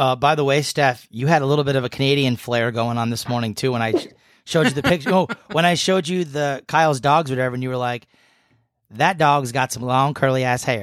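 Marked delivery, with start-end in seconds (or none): 8.9-10.8 put-on Southern accent. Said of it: "I don't know why I did a Southern accent".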